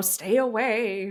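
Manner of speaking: put-on swamp witch voice. Speaker explaining how they guard their life, swamp witch voice. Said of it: "I sounded like a swamp witch".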